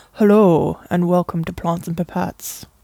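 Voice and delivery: slow, deep ASMR voice. Demonstrating an ASMR-style podcast intro: ASMR voice, octaves lower. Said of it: "several octaves lower than my normal voice".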